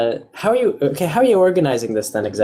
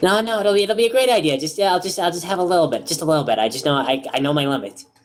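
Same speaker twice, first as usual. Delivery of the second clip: pixie character voice, higher pitch; 4 semitones higher than usual. Voicing a pixie insisting she can drink: voicing the pixie. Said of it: "And then she".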